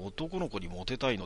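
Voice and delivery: ordinary talk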